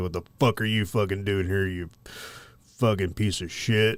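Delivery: foul-mouthed, ranting werewolf monster voice. Retelling what a werewolf said to a lost driver: imitating a werewolf. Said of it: "this werewolf takes a puff of the cigarette, and he's like".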